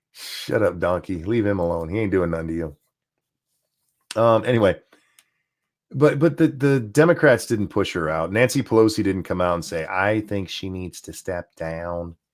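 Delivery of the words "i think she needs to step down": put-on soft, slow drawling Southern accent. Voicing a made-up quote from Nancy Pelosi, in a put-on southern voice. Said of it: "I don't know why I gave her a southern voice there".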